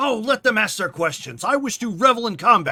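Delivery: very loud, high, dismissive scoffing brush-off. Thor answers the others, who are asking questions, scoffing as Thor. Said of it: "Thor scoffs and he's just like".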